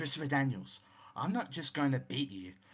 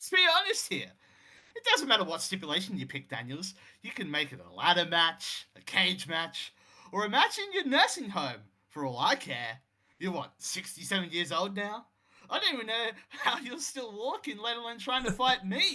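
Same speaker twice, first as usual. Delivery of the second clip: mocking, taunting trash-talk tone, pitched up; 7 semitones higher, 3 dB louder than usual. Acting out a wrestler's promo taunting an old opponent: mocking Adam Cole taunt. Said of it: "As Cole laughs mockingly".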